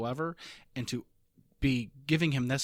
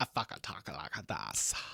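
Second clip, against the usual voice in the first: put-on seductive voice, lower and quieter; 6 semitones lower, 7 dB quieter than usual. Imitating how a TV character talks in the bedroom: imitating Gus's bedroom voice. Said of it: "that's how he talks when he's in the bedroom".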